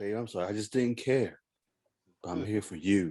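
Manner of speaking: acted-out silky, smooth, easy, unbothered sweet talk. Imitating a founding member's famous line: imitating a smooth voice. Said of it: "the smoothest way you can say".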